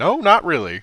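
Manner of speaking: very loud, high, caught-off-guard, taken-aback voice. Character asked to introduce herself, answering while still taken aback. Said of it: "still kind of being like taken aback".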